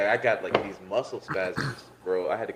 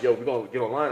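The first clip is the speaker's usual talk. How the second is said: ordinary talk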